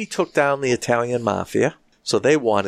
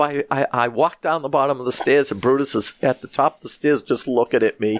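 plain

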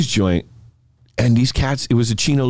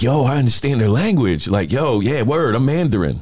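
plain

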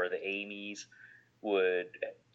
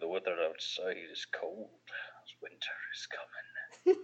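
put-on smart speaker voice, quieter; 2 semitones lower, 7 dB quieter than usual. Imagining the home assistant answering a weather question: Sean Bean voice. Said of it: "your Amy with Sean Bean's voice".

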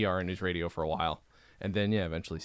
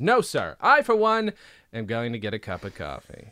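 mock dismissive, loud, swooping, offhand, uninvested; 3 semitones higher, 7 dB louder than usual. Retelling a TV scene where Bill answers the group: imitating Bill, mock dismissive.

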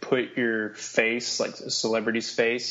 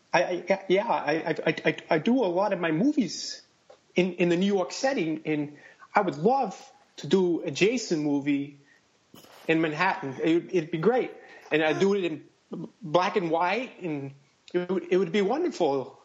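halting, stumbling, word-repeating patter, pitched up; 6 semitones higher than usual. Answering a request to describe a Friday the Thirteenth movie: Woody Allen impression. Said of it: "in Woody Allen's voice".

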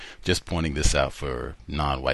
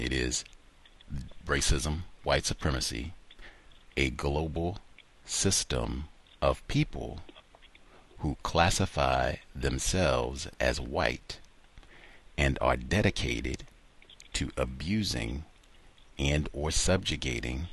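slow pace; 3 dB quieter than usual. Repeating a definition so the other speaker can follow it: slow. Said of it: "I'll give it again slow".

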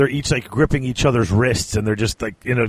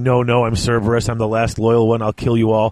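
ordinary delivery

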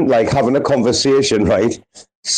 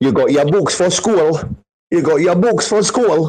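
imitated Newcastle accent; 4 semitones higher than usual. Mocking the Newcastle accent after calling it abysmal: Newcastle accent. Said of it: "That Newcastle accent is fucking absolutely abysmal".

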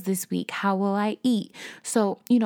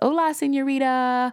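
put-on cheerful voice, much higher; 5 semitones higher than usual. Retelling dad phoning on one of his great days, imitating dad's cheerful greeting. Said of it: "having a great day because he greets me".

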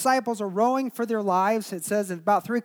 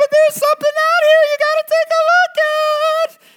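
very high, loud shriek, stretched out on "at"; 11 dB louder than usual. Retelling the disciples rowing in the waves as John calls out to Peter; John's very high voice. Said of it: "I didn't think my voice could get any higher".

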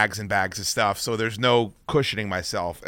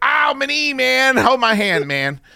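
play-acted very high, loud yelling in pain; 5 dB louder than usual. Speaker recounts hurting his knee when he landed, retelling screaming in pain. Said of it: "I started screaming".

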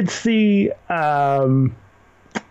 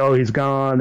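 usual speaking voice

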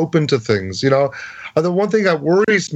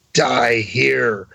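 put-on hag voice, lower pitched; 4 semitones lower than usual. Describing voices heard in a recording, imitating a hag's voice. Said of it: "what I call the hag, she goes".

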